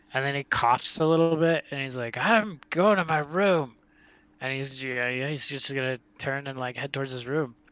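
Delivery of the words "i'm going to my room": angry rattling yell, higher, louder and slower. Voicing a man who turns to head to his room, angry yell with a throat rattle. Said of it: "He's angry".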